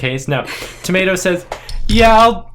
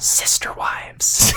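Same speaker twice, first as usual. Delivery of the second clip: put-on whispered line, quieter. Voicing a character hugging a player and whispering in their ear: whispering in character. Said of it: "whispers in your ear".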